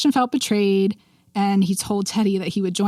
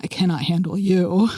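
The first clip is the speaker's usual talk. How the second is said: really sultry, seductive voice. Retelling a scene from Miss Scarlet and the Duke, imitating William, sultry. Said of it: "in like this really sultry voice".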